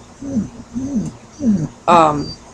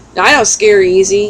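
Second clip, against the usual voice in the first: ordinary talk, nothing marked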